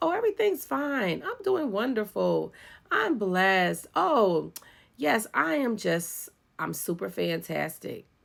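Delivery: fake bright, sing-song, put-on cheerful tone. Retelling the reply always given when asked if okay: put-on cheerful reply. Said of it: "I was wearing a mask".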